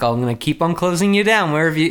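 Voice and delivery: ordinary delivery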